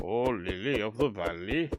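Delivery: slow, clumsy, terribly bad put-on Welsh accent. Grabbing lilies, naming a flower in a terribly bad Welsh accent. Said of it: "that was a terribly bad Welsh impress Welsh accent impression".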